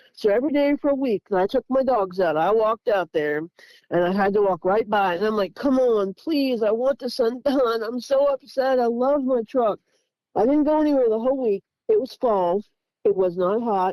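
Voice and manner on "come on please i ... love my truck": put-on distressed, upset pleading lament. Retelling praying over a dented truck: retelling own upset pleading. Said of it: "And I was so upset".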